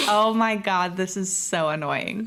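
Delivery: ordinary delivery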